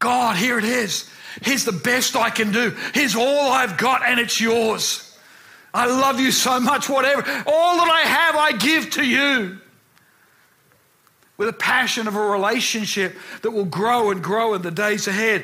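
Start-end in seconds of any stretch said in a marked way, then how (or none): 0.0-9.6 impassioned, passionate, fervent, poured-out delivery. Showing how to pray to God: prayer done with passion. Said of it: "done with passion".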